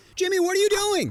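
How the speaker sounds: high-pitched, panicked yelling.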